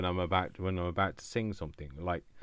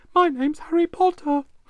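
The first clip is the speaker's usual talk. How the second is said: shrill, very high, very loud put-on voice; 11 dB louder than usual. Joking about a recorder that plays back higher frequencies better: put-on higher voice. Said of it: "I have to speak like this from now on".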